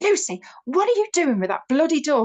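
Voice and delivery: acted exasperated snapping. Retelling snapping at someone over a squeaking door: imitating snapping at someone. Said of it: "I snapped at Lucy".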